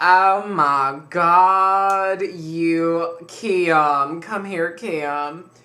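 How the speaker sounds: put-on booming, very loud, slow, drawn-out southern accent. Quoting what a woman said on seeing the speaker come in, in a beautiful southern voice. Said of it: "She has this very beautiful southern voice".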